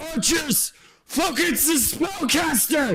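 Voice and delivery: shrill, very high shout. Voicing a character in midair ordering the archers: yelling a command. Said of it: "he is going to yell out".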